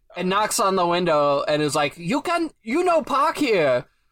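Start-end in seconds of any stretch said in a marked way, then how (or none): 1.9-3.8 put-on old man voice. Retelling a man knocking on the window: stereotypical old Chinese man voice. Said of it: "Complete with the voice and everything. ... I'm only doing this voice".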